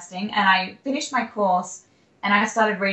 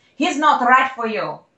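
put-on Russian accent; 4 semitones higher, 4 dB louder than usual. Retelling what a woman said after smacking the table, in a Russian accent. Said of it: "I'll stop talking in the accent so you can understand".

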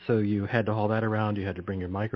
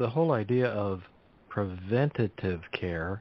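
slow, deliberate, each word drawn out. In a conversation about western medicine, saying the phrase slowly. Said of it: "i say that slowly".

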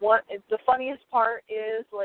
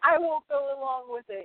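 mock tearful protest, blubbering through baby-like sobs; 4 semitones higher than usual. Retelling what a crying man said, imitating someone crying like a baby. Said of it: "he's crying like a baby".

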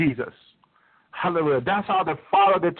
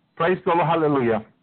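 ordinary delivery

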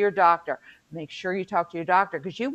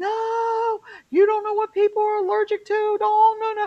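mock very high screaming, no stretched out; 4 dB louder than usual. Speaker retells a moment at work with their boss, imitating themself screaming. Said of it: "I'm like screaming".

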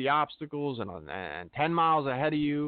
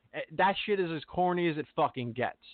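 ordinary talk, nothing marked

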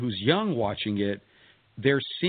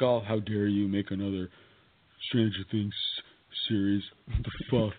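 silly put-on troll character voice; 3 semitones lower, 3 dB quieter than usual. Discussing a show's possible return, voicing an imagined objector in a troll voice. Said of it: "your troll voice".

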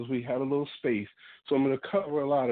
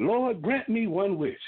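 sudden mock shout at full voice; 7 semitones higher than usual. Telling a story of a man praying on a beach, retelling a shout. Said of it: "he just shouted out loud".

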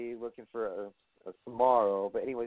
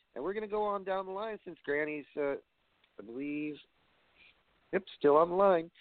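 ordinary talk, nothing marked

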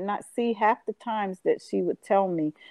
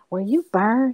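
whisper, higher pitch; 4 semitones higher than usual. Retelling how people got up close and asked: imitating someone whispering. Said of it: "they would whisper".

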